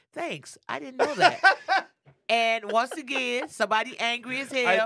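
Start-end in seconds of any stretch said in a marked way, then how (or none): 0.2-1.9 play-acted heavy sarcasm, loud and pitched up. Quoting what a man keeps posting about his own people: imitating a sarcastic reply. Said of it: "something real sarcastic".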